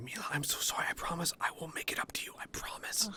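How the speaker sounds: barely-there, very quiet whisper. In a role-play scene, his character speaks to another character, speaking really quietly. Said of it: "say like really quiet".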